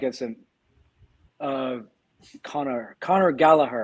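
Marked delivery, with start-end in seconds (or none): 2.4-3.8 Irish accent, put on. Discussing a player back at Chelsea, saying his name in an Irish accent. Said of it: "There's my Irish accent".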